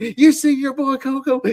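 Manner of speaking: put-on scolding yell. Retelling a match moment where Jimmy Hart scolds a bird: imitating Jimmy Hart yelling. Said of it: "Jimmy Hart just yelling at the bird".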